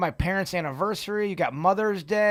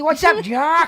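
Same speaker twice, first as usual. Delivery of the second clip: put-on higher-pitched, old-fashioned nineteen twenties-style voice; 8 semitones higher, 7 dB louder than usual. Coaxing another speaker to do an impression: Bugs Bunny voice. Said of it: "all you gotta do is a nineteen twenties voice".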